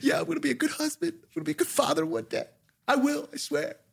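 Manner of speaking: put-on, very high, tearful blubbering sob-talk. Retelling own answer in a show's exit interview: imitating own past crying. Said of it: "I start crying".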